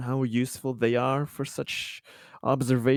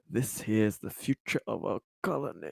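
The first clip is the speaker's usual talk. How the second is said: soft whisper under the breath; 3 semitones lower, 6 dB quieter than usual. A man watches his neighbors run out, whispering to himself. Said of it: "He kind of whispers to himself".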